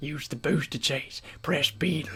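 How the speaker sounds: put-on old southern drawl. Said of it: "sounds like he's at least sixty-five and from, like, Mississippi".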